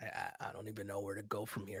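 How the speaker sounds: hoarse voice. Podcast co-host reacting after a tough week, with a raspy voice. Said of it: "It's still raspy".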